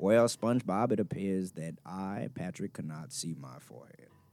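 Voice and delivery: movie narration voice. Saying a Patrick line when asked to: Morgan Freeman voice. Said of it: "try to say a Patrick line like Morgan Freeman".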